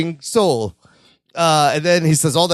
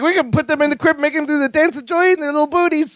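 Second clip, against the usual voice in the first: very high, breathless, rushed, thrilled gushing; 9 semitones higher than usual. Retelling a scene from an episode, imitating excited Balky. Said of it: "He's all excited".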